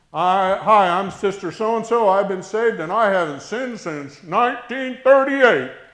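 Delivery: very loud, booming, shrill, fervent testifying voice. Imitating people standing up to testify, poking fun: mocking imitation of a testifying church member. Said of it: "I'm poking fun".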